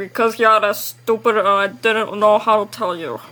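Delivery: put-on gruff cartoon old man voice. Retelling a Ben 10 scene where Grandpa Max answers the kids: Grandpa Max impression. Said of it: "That's my Grandpa Max impression".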